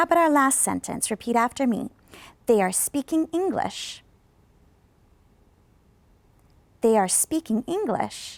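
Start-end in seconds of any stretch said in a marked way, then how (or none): 2.5-8.4 rise-fall intonation, pitch climbing then dropping on English. Teacher models a last sentence for students to repeat, rise-fall intonation. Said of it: "heard that one go up and down".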